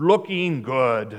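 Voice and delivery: rough, gruff voice. Pastor recalls what a man told him about the church, gruff voice. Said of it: "I remember that gruffy voice".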